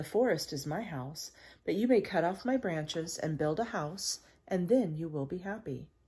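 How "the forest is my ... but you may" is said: usual speaking voice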